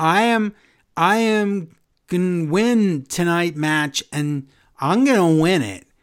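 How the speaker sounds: put-on voice of an eleven-year-old child. Retelling Liv Morgan's segment: imitating Liv Morgan talking like an eleven-year-old. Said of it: "she's talking like she's eleven years old".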